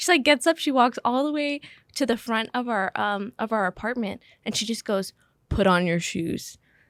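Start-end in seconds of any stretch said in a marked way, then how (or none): 5.5-6.6 put-on deep voice, much lower and slower. Speaker retelling a terrifying moment, quoting what she said: retelling in a deep voice. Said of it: "she goes in like this like deep voice".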